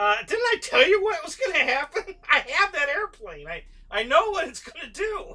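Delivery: play-acted shrill laughing delivery, very loud and high. Retelling own words to friends after their plane caught fire: laughing while talking. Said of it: "I'm just sitting there laughing".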